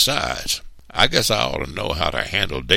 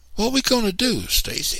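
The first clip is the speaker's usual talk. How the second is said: very high, anxious, worried voice. The narrator turning to Stacy after Mr. Anderson walks away, anxiously. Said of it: "I asked anxiously".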